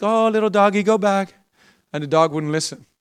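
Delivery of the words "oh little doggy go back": soft, gentle, coaxing pleading tone. Retelling a lady at a bus stop sending her dog home: imitating a lady pleading softly. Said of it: "She's like".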